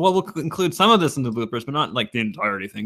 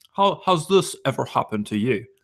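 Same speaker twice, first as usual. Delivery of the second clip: calm, soothing, put-on British accent. Asked for a soothing British voice, the speaker voices a character: soothing British voice. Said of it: "a soothing British voice".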